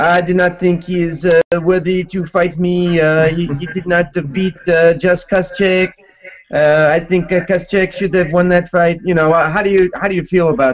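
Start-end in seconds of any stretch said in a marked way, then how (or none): 0.0-9.0 halting put-on French Canadian accent. Asking about a fighter's remarks, doing a G S P impression. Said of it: "that's my G S P impression".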